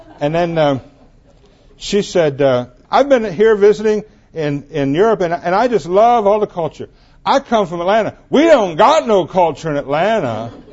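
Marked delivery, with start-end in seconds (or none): 2.9-10.5 very loud, high, obnoxious chatter. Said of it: "very loud, very obnoxious voice say".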